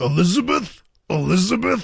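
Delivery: rough, exaggerated put-on voice. Doing a voice while calling the name Elizabeth: Randy Macho Man Savage voice. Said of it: "I'm going to do a voice here".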